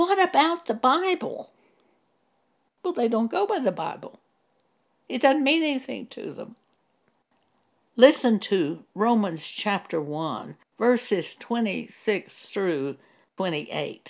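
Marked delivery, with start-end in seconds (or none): 0.0-1.5 mock, piercing, shrill, very high-pitched scream. Retelling screaming at the tv after a remark on television: retelling a scream. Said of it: "I screamed at the T V".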